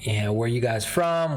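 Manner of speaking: ordinary talk, nothing marked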